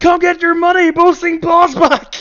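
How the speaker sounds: put-on scream. Acting out a character calling to the crowd: in-character scream. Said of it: "I'm just gonna scream".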